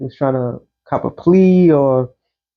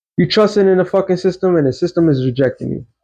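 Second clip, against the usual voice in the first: usual speaking voice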